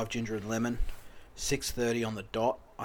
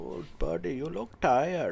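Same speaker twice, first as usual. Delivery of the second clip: put-on Indian accent with raised pitch; 5 semitones higher than usual. Retelling what a man said to the speaker at 3:45 in the morning, indian accent impression. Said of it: "I'm going to have to do the accent".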